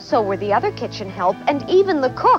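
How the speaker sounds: ordinary delivery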